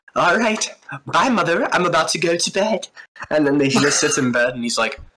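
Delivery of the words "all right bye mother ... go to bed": weird, high-pitched put-on child voice. Acting out a kid in a made-up spooky story: odd put-on kid voice. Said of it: "Why does he sound like that?".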